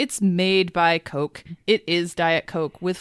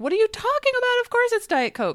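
mock voice climbing way high, worked-up yelling. Speaker reenacting yelling at TBTL from the car: retelling a scream. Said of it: "your voice goes up just like mine does when I'm arguing".

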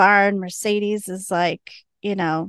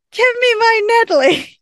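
mock, very high, drawn-out yell; 14 semitones higher, 5 dB louder than usual. Retelling a scene where Wynonna yells back: imitating Wynonna yelling. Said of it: "And Wynonna yells".

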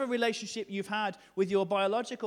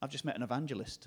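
normal talking voice

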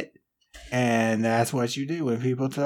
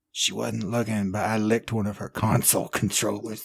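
hushed whispering, lower; 4 semitones lower than usual. Sitting in the van, the character leans over to a companion: whispering. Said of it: "he leans over and whispers".

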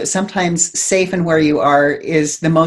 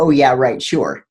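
low, mock snarky, downplaying sarcastic voice; 4 semitones lower than usual. Describing the inner voices that downplay manifesting, mock-snarky inner voice. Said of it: "the snarky little voices going".

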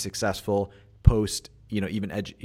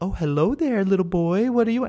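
put-on very high, loud, talking-down baby talk; 11 semitones higher, 5 dB louder than usual. Retelling how a store clerk greeted a six-year-old: imitating talking down to a child. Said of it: "talking to him like, like you would a six-year-old".

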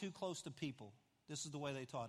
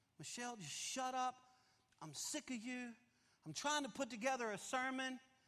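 put-on loud yell, pitched higher; 8 semitones higher than usual. Retelling snapping at the wife under sermon pressure: imitating own loud yell. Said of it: "Except I said it really loud".

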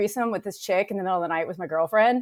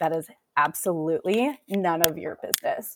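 put-on acted mean teen girl voice, bitchy and snotty; 3 semitones lower, 4 dB quieter than usual. Retelling her reply to a rude question: imitating her bitchiest mean voice. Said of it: "my bitchiest, mean, you know, eighth grade girl voice".

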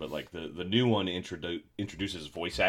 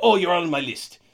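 put-on shrill, loud, squeaky, goofy Italian accent; 11 semitones higher, 10 dB louder than usual. Retelling a game character's line when shot: Rabbid Mario voice. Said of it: "He's just weird Italian".

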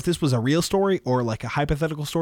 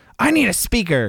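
mock angry small voice, higher; 4 semitones higher, 4 dB louder than usual. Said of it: "the most angry little voice I've ever heard".

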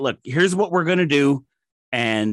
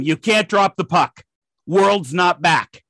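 firm, direct voice, called out across distance; 3 semitones higher than usual. Retelling reaching the official at center ice: retelling own yell. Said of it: "And I yell at him".

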